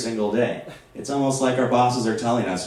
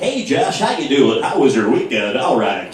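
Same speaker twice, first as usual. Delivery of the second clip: loud strip-club DJ voice with radio-style patter; 5 dB louder than usual. Imitating his boss greeting him at work: strip club dj voice. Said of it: "strip club D J voice".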